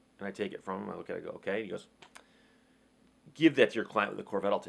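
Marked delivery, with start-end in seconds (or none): 3.4-4.7 mock-condescending man's voice, pitched lower. Speaker retelling what a man said after handing over his card, mimicking a condescending tone. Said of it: "really condescending look and tone to his voice".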